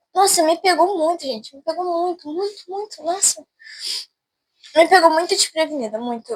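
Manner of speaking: tearful speech through crying. Alone at home, telling her audience what she feels while crying while talking. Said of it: "eu vou chorar muito falando".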